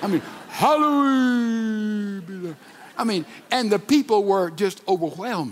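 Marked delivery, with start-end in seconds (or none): 0.5-2.6 hallowed stretched over many syllables, high and slow. Retelling a man quoting the Lord's Prayer, with drawn-out hallowed. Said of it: "hallowed had 15 syllables when he pronounced it".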